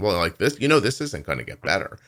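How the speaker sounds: put-on dismissive tone. Retelling what a woman in charge said about the mother: imitating her offhand tone. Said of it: "she actually said it to me in that tone".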